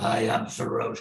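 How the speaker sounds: rough, creaky, gravelly voice. Remembering a speaker in the library: imitating Sarosh's gravelly deep voice. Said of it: "he had a real gravelly, deep voice".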